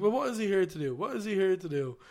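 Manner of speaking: heated, worked-up, insistent, pressing, repeated. Retelling a heated pundit argument about Ronaldo: imitating heated Jamie Carragher. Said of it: "And they're getting really heated".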